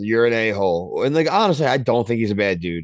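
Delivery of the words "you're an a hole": usual speaking voice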